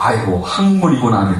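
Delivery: ordinary talk, nothing marked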